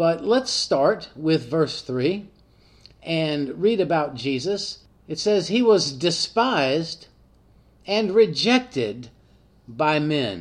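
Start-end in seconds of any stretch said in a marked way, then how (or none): 5.5-10.4 slow, halting reading with pauses inside phrases. A podcast host reads a Bible verse aloud so the words sink in, reading slowly. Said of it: "I read that slowly".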